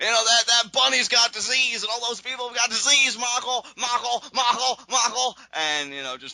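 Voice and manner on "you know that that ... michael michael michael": ranting and raving, loud and high-pitched. Retelling a wrestling commentator's rant about the bunny: JBL impression. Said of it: "your best J B L impression ever".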